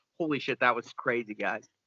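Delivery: ordinary talk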